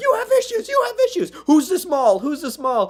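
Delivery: very high, loud screamed outburst. Retelling a movie scene, acting out a woman in it: imitating someone screaming. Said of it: "she's screaming like".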